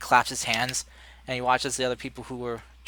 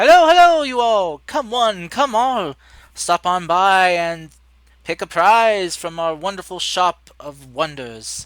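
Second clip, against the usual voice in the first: very loud, high barker's call; 7 semitones higher, 12 dB louder than usual. Voicing a costumed performer who runs up to the group: costumed barker calling out. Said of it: "call to you and run up".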